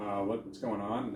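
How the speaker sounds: ordinary delivery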